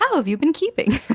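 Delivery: very loud, booming, high-pitched hail. Telling how she'll greet people, in a voice overheard at a tavern. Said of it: "in a a voice I'm sure she overheard, just like someone say at a tavern".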